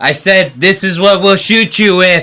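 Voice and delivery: put-on insistent repeat. Retelling Trump repeating a line into Putin's ear: imitating Trump saying it louder. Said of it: "goes even louder in his ear".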